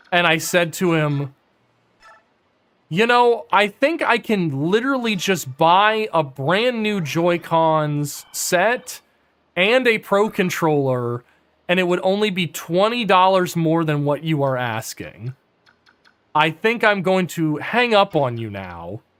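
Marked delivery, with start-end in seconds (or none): none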